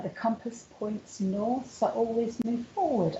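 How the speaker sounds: normal talking voice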